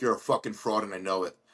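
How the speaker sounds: acted angry outburst, mock-furious. Caller recounting a suspicious call, reenacting freaking out at the girl: retelling freaking out angrily. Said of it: "I was freaking out on this girl".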